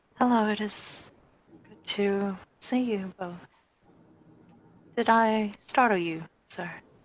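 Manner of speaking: very quiet whisper. Voicing a shopkeeper greeting two visitors: very quiet whisper. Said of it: "He says in, you know, very quiet whisper".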